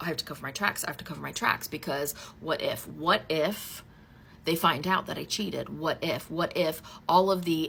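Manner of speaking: normal talking voice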